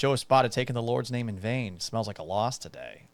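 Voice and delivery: ordinary talk, nothing marked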